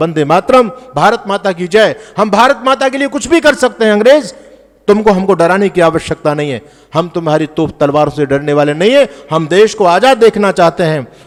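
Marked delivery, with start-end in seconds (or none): none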